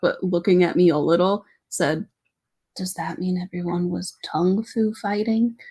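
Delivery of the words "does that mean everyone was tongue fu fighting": put-on quiet muttering under the breath. Retelling a quiet classmate's joke: imitating someone muttering under his breath. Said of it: "just kind of under his breath".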